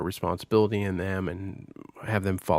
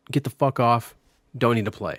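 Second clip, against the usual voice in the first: put-on frustrated scolding tone, higher and louder; 3 semitones higher, 6 dB louder than usual. Retelling scolding the kids off a game: retelling frustrated parent scolding. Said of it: "when parents get a little frustrated".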